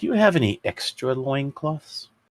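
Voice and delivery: high, audible whisper.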